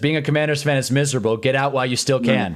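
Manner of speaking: normal talking voice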